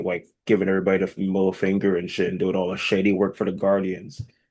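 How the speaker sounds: ordinary delivery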